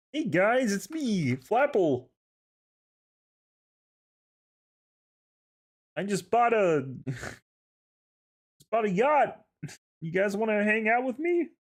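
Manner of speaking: very high pitch, drawn out. Voicing Uncle Flapple inviting kids onto his yacht: Kermit voice. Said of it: "made him turn into Kermit".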